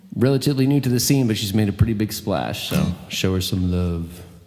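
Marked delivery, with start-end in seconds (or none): 2.7-4.1 creepy delivery, much lower and slower. A host bringing the next comedian up to the crowd, in a creepy way. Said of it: "I said that in a really, like, creepy way".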